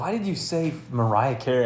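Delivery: ordinary delivery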